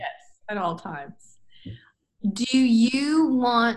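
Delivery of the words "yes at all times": breathy, whispered, seductive delivery. Agreeing with another speaker about covering yourself: seductive tone. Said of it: "You said it very, like, seductively".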